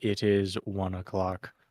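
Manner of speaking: droning, flat monotone delivery. Imitating him announcing the hour with a big bell, flat monotone voice. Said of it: "he's just like very monotone".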